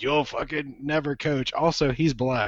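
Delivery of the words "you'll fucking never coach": put-on old cigar-smoker voice.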